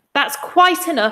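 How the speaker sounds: high-pitched, abrupt snapping, cutting off. Grandma Josephine cuts in, unable to bear listening any longer: snapped. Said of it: "snapped Grandma Josephine".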